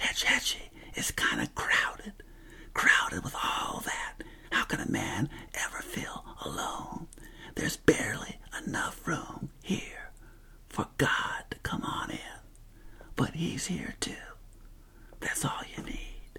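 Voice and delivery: soft whisper, spoken close. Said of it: "I'll whisper this to you".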